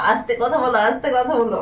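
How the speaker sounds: plain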